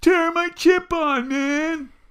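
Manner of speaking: very high, very slow, drawn-out scream. Retelling a Bill Burr bit where a man screams at the sky: imitating Bill Burr screaming. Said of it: "he's screaming at the s-, at the sky".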